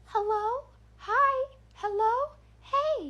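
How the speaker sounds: very high, very slow creepy doll voice. Speaker recounts a voice circling the fence line; creepy doll voice. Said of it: "creepy doll voice floating around the fence line".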